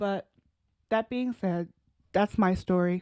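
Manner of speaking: voice quivering and trembling, close to tears. Finishing a personal story about needing a break from work, voice quivering close to tears. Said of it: "why is my voice quivering like I'm gonna cry".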